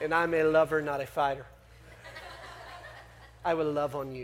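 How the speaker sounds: low, soft, sexy voice with a Spanish accent.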